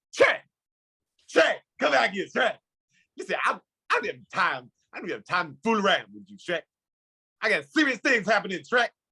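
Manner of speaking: very high, animated, wildly swooping cartoon voice. Demonstrating how to get into doing an impression, calling after Trey: Donkey impression. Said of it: "you get your face into the into the mode of doing the impression".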